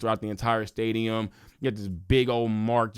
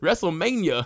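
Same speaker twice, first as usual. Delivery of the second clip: strong, higher-pitched country accent; 8 semitones higher, 3 dB louder than usual. Repeating a word that felt weird to say, country accent. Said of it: "Sound hella country for a second".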